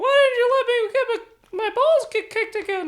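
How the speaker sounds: very high, shrill, loud put-on squeak. Acting out the other guy after he gets hit, in a higher voice. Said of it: "I'm speaking in a higher voice".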